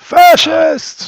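very loud, very high, shrill top-of-lungs scream. Yelling at police officers in character, as loud as possible. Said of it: "as loud as I possibly can".

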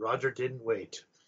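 very quiet, hushed storyteller narrator voice. While others talk about Roger waiting for dinner, one speaker cuts in: narrator voice. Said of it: "Narrator voice".

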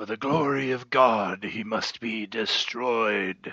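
loud battle-cry shout. Narrating a game scene, the speaker voices a figure lunging from the mist; Fawcett crying out. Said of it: "You hear a voice cry out".

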